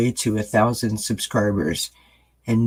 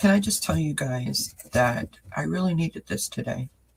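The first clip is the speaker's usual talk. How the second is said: on the verge of tears, soft, pitched up; 5 semitones higher, 5 dB quieter than usual. Speaking to the guys before reading a postcard, tearing up. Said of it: "I'm tearing up".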